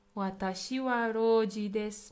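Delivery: ordinary delivery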